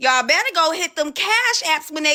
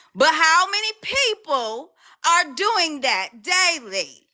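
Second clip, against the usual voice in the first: voice pushed back up, forceful and aggressive. Speaker addressing their audience after lowering their voice earlier, raised voice. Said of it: "I raised my voice back up".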